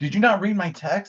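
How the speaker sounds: mock yelling, very high-pitched. Retelling a sister's angry text complaint: imitating sister yelling. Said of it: "she's yelling at me".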